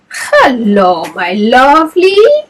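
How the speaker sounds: raspy vampire voice with drawn-out hello. Reading a story aloud, voicing a vampire who jumps out of a box, rasping. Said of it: "he rasped".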